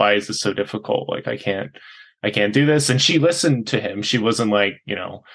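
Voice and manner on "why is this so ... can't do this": put-on crying voice full of tearful despair. Retelling how a man cried in his wife's arms: retelling someone crying. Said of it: "crying and being like".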